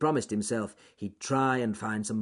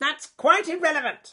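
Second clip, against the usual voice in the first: very high, shrill, loud snapping tone; 7 dB louder than usual. Narrator reading the wild eagle's retort to the bear, snapped. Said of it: "snapped Claw the Wild Eagle".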